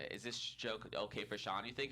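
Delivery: ordinary talk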